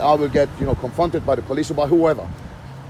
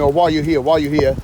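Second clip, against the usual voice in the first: plain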